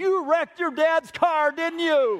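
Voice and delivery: very high, shrill, loud scream. Retelling how their mom answered the phone and screamed at them: retelling mom screaming. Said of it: "she screamed into the phone".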